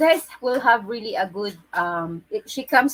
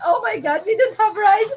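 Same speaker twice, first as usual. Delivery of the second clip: very high, talking through laughter; 12 semitones higher, 4 dB louder than usual. Imitating a cheerful woman who is always laughing: imitating her laughing speech. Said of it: "she's always laughing like that".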